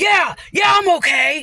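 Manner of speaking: high, slow, play-acted raging, defiant shout. Retelling the other driver's answer after the crash, imitating an angry reply. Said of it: "angry, like, rage".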